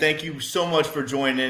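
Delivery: ordinary delivery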